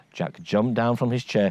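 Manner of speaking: plain reading voice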